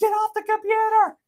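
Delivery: yelling, pitched very high. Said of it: "I remember her yelling at me".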